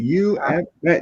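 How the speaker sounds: high-pitched screaming. Imagining someone on the phone afterward, imitating someone screaming. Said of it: "started screaming at me".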